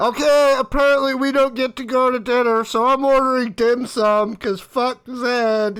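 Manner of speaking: high, loud yelling in character. Voicing a character who orders dim sum and blames Zed: yelling in character. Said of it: "You hear Adela yelling at".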